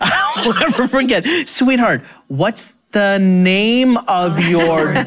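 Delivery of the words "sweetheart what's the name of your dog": slow, deliberate speech with words stretched out. Retelling how a teacher repeated a question to a child: imitating someone speaking slowly. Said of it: "maybe if I say it slower".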